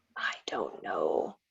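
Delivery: quiet unvoiced whisper.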